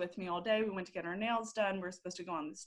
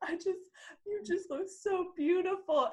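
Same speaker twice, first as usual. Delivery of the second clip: put-on sobbing voice, higher pitch; 11 semitones higher than usual. Retelling what mom said in the car, imitating a sobbing mother. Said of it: "she just starts sobbing".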